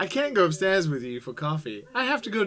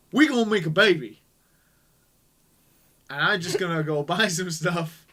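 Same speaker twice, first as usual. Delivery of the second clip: mock cocky, super confident guy voice. Acting out a commenter's line after calling him super confident: imitating a super confident guy. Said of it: "that's like a super confident guy".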